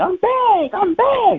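fake rapid panting breaths. Retelling a player's touchdown celebration, imitating Cam hyperventilating. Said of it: "He was hyperventilating".

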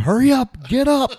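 very high, very slow, loud, drawn-out yell. Retelling a sideline moment with a sick player: retelling own yell. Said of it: "I'm sitting there yelling at him".

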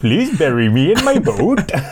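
clumsy, bad, put-on Indian accent. Joking with another speaker, slipping into a bad Indian accent.

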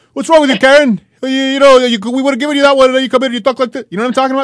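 put-on loud Montreal Lebanese accent. Showing how a certain man sounds when he talks, in a Lebanese guy from Montreal voice. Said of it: "every single like Lebanese guy from Montreal who talks like this".

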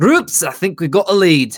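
put-on Scottish accent. Voicing the character Henderson as he finds a lead: put-on Scottish accent. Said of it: "I'm gonna continue doing Scottish".

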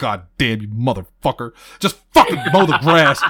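fed-up, loud, rising frustrated cursing. Recalling cursing at the mower while mowing, retelling own frustrated cursing. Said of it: "she heard me just sitting there going".

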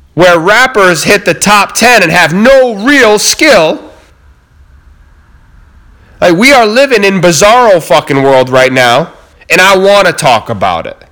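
earnest, impassioned, fired-up passionate delivery. You tell listeners what you want to talk about, not angry: loud, passionate delivery. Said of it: "don't mistake my loud delivery for anger".

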